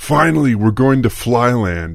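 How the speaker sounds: high, eager, excited exclamation. A wife speaks to her husband, exclaiming. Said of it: "I exclaimed".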